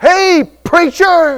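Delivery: high, loud calling out. Pastor recalling someone in a restaurant calling out to him, retelling a holler. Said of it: "someone hollered from across the way".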